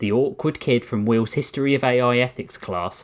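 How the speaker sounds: ordinary delivery, nothing marked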